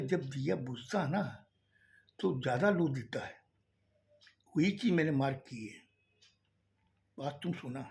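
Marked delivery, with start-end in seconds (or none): none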